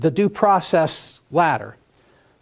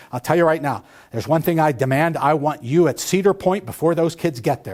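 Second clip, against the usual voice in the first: usual speaking voice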